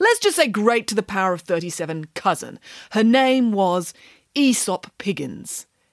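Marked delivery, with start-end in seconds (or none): none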